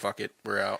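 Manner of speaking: ordinary delivery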